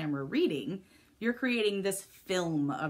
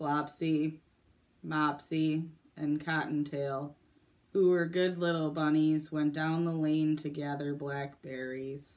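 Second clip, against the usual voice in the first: flat, dull, boring monotone reading; 3 semitones lower than usual. Showing how not to read a story on camera: boring monotone. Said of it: "in a very boring monotone voice".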